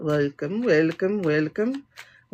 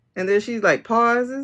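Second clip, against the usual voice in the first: plain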